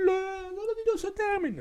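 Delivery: silly put-on voice, pitched very high. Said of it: "je prends cette voix".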